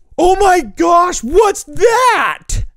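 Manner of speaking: high, loud, shocked shout.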